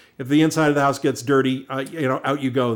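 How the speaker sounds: usual speaking voice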